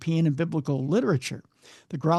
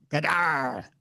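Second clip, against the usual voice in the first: low, mean, beastly three-syllable growl. Reading a witness account aloud, imitating a creature's low mean growl. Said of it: "a three-syllable growl, low and mean".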